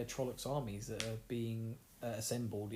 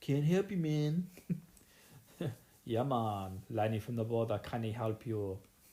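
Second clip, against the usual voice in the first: loud, appalling put-on Jamaican accent; 6 dB louder than usual. Voicing a dismissive character: bad jamaican accent. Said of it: "that's a terrible Jamaican accent".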